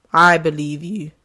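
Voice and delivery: voice cracking with emotion. Speaking to listeners about sharing their stories, voice cracking. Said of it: "my voice is cracking".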